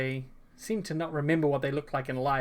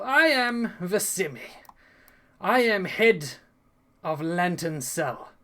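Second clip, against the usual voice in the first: slow rasp that reverberates unnaturally, ringing out; 4 semitones higher than usual. Narrating a game, the ghost Vicimi introduces himself to the players: raspy, reverberating voice. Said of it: "he speaks with a raspy voice that reverberates unnaturally".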